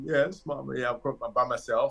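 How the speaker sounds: put-on crying, tearful voice. Retelling a phone call to mom from a bathroom stall: imitating own past crying. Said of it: "I'm crying and".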